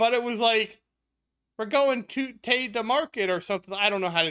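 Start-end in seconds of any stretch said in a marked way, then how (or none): 1.6-3.3 bad, failed attempt at Scottish accent. Telling scottish listeners how their speech sounds to her, in a bad scottish accent. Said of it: "I can't do Scottish accent".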